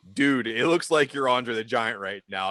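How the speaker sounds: ordinary talk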